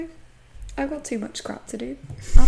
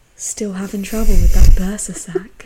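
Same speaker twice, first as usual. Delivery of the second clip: put-on flirty voice, much louder; 3 semitones lower, 10 dB louder than usual. Quoting what a man says to a woman rubbing her neck: retelling a flirty line. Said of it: "And it's so flirty".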